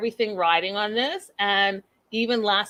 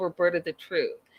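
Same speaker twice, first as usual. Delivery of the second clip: ordinary talk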